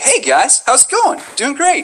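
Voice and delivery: animated sing-song voice. Showing how people raise their voice in front of a microphone, raised voice. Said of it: "we start raising it".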